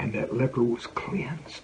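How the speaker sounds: slow, hushed whisper.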